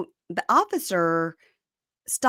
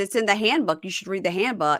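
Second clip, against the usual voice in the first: normal talking voice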